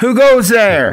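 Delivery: calling out, yelling. Calling out in character to an unseen figure on the trail: yelling out. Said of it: "yell out".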